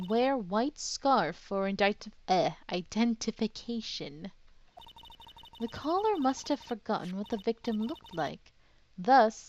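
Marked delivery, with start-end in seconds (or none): none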